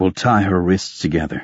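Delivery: plain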